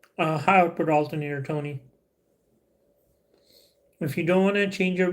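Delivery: talking while chewing, mouth full. Answering a viewer's question about replacing a battery, talking while eating lychees. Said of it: "I'm eating some lychees right here".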